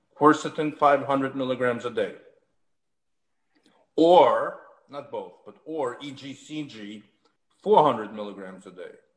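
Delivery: slow, deliberate, carefully spaced-out dictating. Speaker giving dosing for listeners to write down, slow, deliberate dictation. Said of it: "I'm going to say it slowly".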